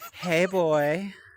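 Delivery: put-on femboy bottom voice. Asking whether the dream voice sounded like this: imitating a femboy bottom voice. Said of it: "Was it like".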